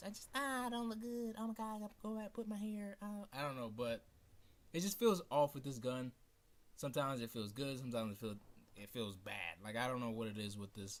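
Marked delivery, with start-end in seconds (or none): 0.0-3.0 squeaky, very high put-on girl voice. Talking about how girls feel about their looks, mimicking them in a girl voice. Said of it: "that was that's my girl voice".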